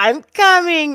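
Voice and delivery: loud, high, thrilled excited yell. Recounting what she yelled at the end of a match: retelling an excited yell. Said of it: "She yells".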